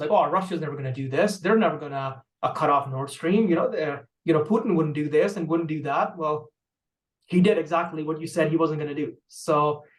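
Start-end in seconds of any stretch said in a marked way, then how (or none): none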